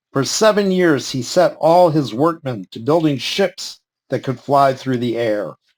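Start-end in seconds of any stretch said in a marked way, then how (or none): none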